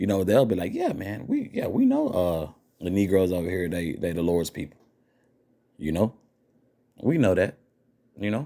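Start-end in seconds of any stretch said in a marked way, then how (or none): 0.7-4.8 nonchalant, casual, offhand, with swooping pitch. Retelling how some people talk about the Lord's people: imitating a nonchalant remark. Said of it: "say it very nonchalantly".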